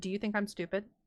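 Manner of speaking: put-on deadpan, straight-faced tone. Retelling sitting down and confronting him: imitating own deadpan question. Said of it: "I looked at him with the straightest face".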